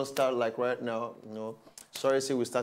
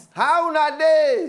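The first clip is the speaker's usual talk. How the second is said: high-pitched, slow, loud shouting voice. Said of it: "Why are you shouting?".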